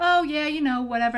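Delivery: offhand, breezy, casual, chatty. Retelling talking over a stomach growl to hide it: imitating own loud talking. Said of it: "talking like this to him".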